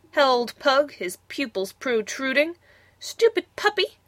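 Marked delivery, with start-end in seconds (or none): 3.0-3.9 very high, curt, sharp snap. Princess Prunella to her puppy Pug, who howled in pain, snapping. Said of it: "snapped Prunella".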